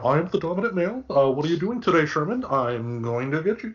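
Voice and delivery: high-pitched talking house cat voice. Retelling how the cat Phil acts, voicing the cat Phil. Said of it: "Phil kinda, you know, walking around".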